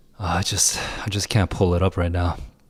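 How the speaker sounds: tired, weary, flat, low-energy voice. Apologizing to viewers during a stream: tired, low-energy voice. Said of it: "this stream being so low energy".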